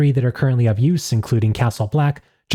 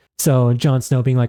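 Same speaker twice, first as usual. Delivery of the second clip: ordinary talk, nothing marked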